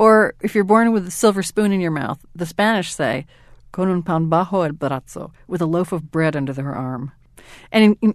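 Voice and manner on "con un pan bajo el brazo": ordinary talk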